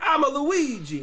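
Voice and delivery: put-on very high, loud, over-the-top New York accent. Retelling how a friend jokes around: offensive New Yorker accent. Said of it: "does a really good offensive New Yorker accent".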